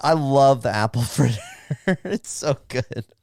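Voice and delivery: talking while laughing and giggling. Naming a favourite donut pick, laughing while talking. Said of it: "I don't know why I'm laughing right now".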